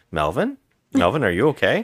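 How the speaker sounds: put-on calm voice. Retelling a mother calling to her son in the bathroom, imitating a calm mother. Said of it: "she's so calm".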